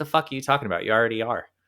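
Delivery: mock casual, unbothered, nonchalant offhand tone. Retelling a mentor's reply: imitating someone speaking nonchalantly. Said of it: "she just very nonchalantly was like".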